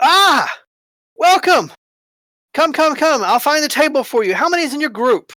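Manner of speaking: bubbly, very cheerful, very high-pitched voice. Game master voicing a greeter welcoming the group at the door, very cheerful voice. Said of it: "greeted by a very cheerful voice".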